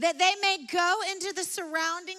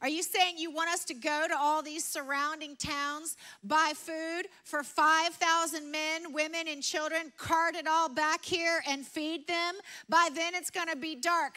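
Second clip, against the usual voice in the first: ordinary delivery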